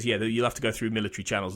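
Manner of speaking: mock dull, zoned-out, flat deadpan monotone. Imitating how a pathologist delivers her lines: imitating a flat monotone delivery. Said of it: "delivers her lines in a really flat, monotone way".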